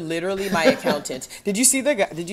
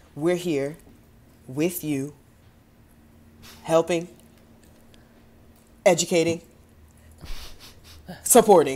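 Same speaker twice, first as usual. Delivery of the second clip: halting, slow, every word set apart by pauses. Imitating how they deliver a favorite line: long pauses between each word. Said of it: "three second pause between each word".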